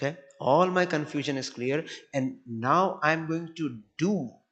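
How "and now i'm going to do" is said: slow, heavy, weighted stress on do. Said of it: "I want to emphasize the word do".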